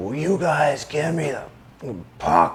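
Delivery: mock hollering, high-pitched screaming. Retelling how a teammate screamed at the defense after a shift, imitating someone screaming. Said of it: "start screaming at the D".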